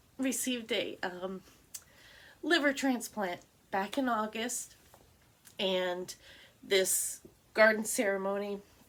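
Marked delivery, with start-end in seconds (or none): 0.2-4.8 tearful, crying, choking up through the words. A parent tells listeners about their son's liver transplant; teary, crying. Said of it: "I don't know why I'm crying".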